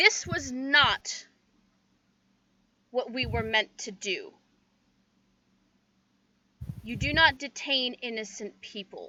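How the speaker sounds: super authoritative, commanding voice. A player's character casts Message to the only one who can hear her: super authoritative voice. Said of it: "super authoritative voice".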